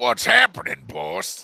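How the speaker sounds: gruff, creaky, cartoon-style caveman voice. Speaker tries making a character sound different, doing a Fred Flintstone voice. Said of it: "make Mr. X sound like Fred Flintstone".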